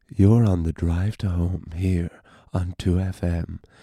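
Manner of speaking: late-night radio DJ voice. Podcast host opening the episode, slipping into a late-night radio tone. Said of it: "this late-night radio tone".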